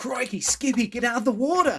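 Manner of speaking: put-on Australian accent, pitched very high. Imagining Steve Irwin stuck in a cloud riding Skippy: Steve Irwin impression. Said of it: "But in an Australian accent".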